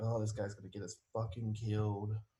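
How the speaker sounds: low, grumbled mutter under the breath. Playing a character complaining about a guide: muttering under breath. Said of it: "mutter under his breath".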